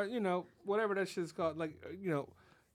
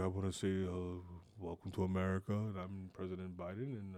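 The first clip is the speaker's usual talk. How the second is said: soothing, much lower pitch and much quieter; 11 semitones lower, 5 dB quieter than usual. Describing dozing off during the State of the Union: soothing Joe Biden impression. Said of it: "Biden's got a very soothing voice".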